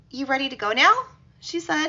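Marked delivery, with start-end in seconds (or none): 0.2-1.0 put-on high childlike little-girl voice, said through the teeth. Reading a creepy story, a woman speaking like a little girl. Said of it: "This is in the voice of a child".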